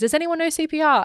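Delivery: mock frantic sobbing, high and panicked crying. Retelling what a woman called out at an emergency, imitating panicked crying. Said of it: "she's freaking out and she's crying".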